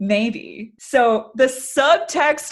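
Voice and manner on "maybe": inviting, playful, flirtatious come-on tone. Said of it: "You feel the flirtation in that?".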